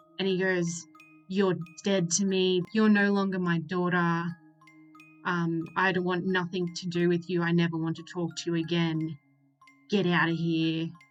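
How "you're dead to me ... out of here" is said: normal talking voice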